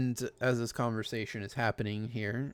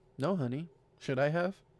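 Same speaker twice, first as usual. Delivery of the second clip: condescending, patronizing tone; 4 semitones higher than usual. Answering a partner's question about seeing a monkey again: condescending tone. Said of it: "That sounded very condescending".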